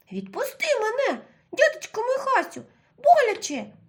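faint, weak, very high squeaky voice, rising. Grabbed by the bear in the dark, the Mole begs to be let go, weak little squeak. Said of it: "писнув у темряві слабенький голосок".

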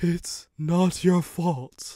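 high, gasping voice with reassuring tone. Narrator voicing a wrecked but still living engine, gasping. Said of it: "it gasped".

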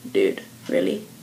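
low, whispered, deadpan disbelief. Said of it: "you're kinda like".

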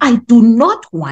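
slow, forceful, emphatic angry tone. Speaker explaining tone in poems demonstrates lashing out, in a forceful angry tone. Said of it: "you are emphasizing".

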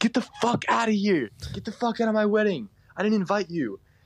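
put-on, very high-pitched, shrill, furious screaming. Retelling how the bride screamed at them: imitating the bride screaming. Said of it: "she just screams at us".

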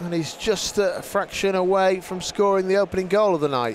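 ordinary talk

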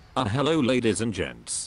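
speaking with British accent. Opening a video for viewers, switching to a British voice. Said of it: "British voice".

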